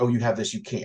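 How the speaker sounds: ordinary talk, nothing marked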